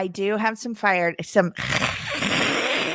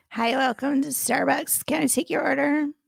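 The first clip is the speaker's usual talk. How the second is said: creaky, indifferent, uncaring stock delivery; 6 semitones higher than usual. Imitating a barista greeting a customer: imitating a barista's greeting. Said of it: "That's how much they care".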